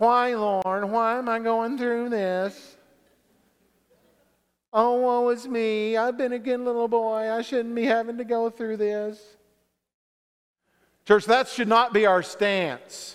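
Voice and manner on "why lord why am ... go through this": whinging complaint tone. A preacher to his church, acting out the whiny question, whiny voice. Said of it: "It's a whiny question".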